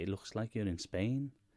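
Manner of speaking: usual speaking voice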